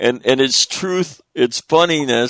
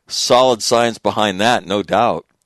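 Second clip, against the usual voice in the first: normal talking voice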